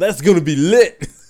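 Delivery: booming, very loud, high shout. Retelling a guy in the audience who shouted out, retelling a shout from the crowd. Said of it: "there's a dude who just shouted out".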